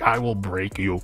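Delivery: really bad, clumsy, half-hearted fake Russian accent. Imagining someone saying it as Ivan Drago, the speaker uses a bad Ivan Drago Russian accent. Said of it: "half half Russian accent, like really bad Russian accent".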